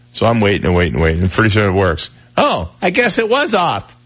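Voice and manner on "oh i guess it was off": very high, drawn-out, slow, swooping sing-song voice. Retelling a phone argument with his daughter: imitating his daughter. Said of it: "That's exactly how she sounds".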